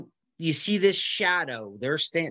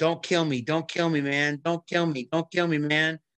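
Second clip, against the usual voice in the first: mock pleading, imitated begging tone. Retelling a movie scene where a thug begs Batman: imitating begging. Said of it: "he's begging him".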